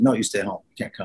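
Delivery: ordinary talk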